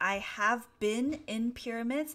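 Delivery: plain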